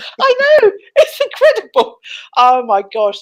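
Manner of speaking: high, giggly, laughing right through the words. Reacting to a joke with a co-host, laughing while talking. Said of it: "can't stop laughing".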